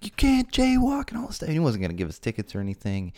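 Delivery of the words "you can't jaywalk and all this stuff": very high-pitched, scolding yell. Retelling how a sheriff yelled at jaywalking boys: imitating a cop yelling. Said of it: "he's yelling, like".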